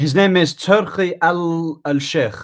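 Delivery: very slow, high, put-on Arabic accent. Saying a name aloud for the other speaker: Arabic accent. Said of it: "man put the Arabic accent on that".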